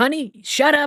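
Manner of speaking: put-on shrill yell. Retelling how a film character yells at his wife on the phone: imitating someone yelling. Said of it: "he yells at his wife".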